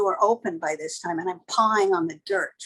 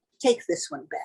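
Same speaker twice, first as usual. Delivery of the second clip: put-on cool dismissive tone, higher pitch; 5 semitones higher than usual. Retelling what a man in the doorway told the cab driver, a cool dismissive command. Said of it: "he looks at this cab driver and he goes".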